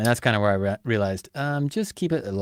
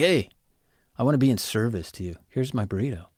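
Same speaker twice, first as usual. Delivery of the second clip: silly mocking guy voice; 2 semitones higher than usual.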